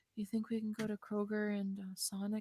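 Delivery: extremely soft, very quiet, almost inaudible voice. Retelling what she asked during a day of store runs: imitating an extremely quiet voice. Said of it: "in her very extremely quiet voice".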